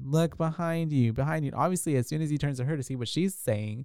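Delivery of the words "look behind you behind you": put-on yell, high-pitched and held back. Retelling a movie scene where she warns him, imitating someone yelling. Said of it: "yelling at him".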